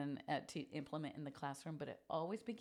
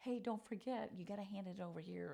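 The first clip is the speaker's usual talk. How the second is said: mock teacher voice, high, calling across the room; 5 semitones higher than usual. Recalling shouting directions at groups during a gallery walk, retelling own shouting. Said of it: "and then I'm shouting like".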